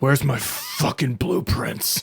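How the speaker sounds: dangerous, breathy whisper, right up close. Voicing Fist, who holds a blade against a character's back: Fist's voice. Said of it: "As you hear Fist's voice".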